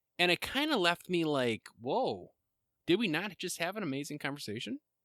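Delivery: ordinary talk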